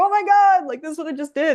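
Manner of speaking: mock excited manner. Recounting running over to share a result, the speaker acts out past excitement. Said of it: "I was so excited".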